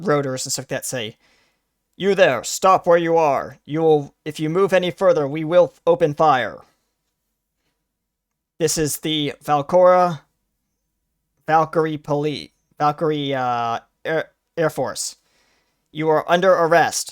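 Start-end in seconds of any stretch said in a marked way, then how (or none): 2.0-17.1 announcer voice as if through a megaphone loudspeaker. Narrating a scene where a spotlight hits the player, as a megaphone voice. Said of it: "a megaphone voice says over the like this like loud drone".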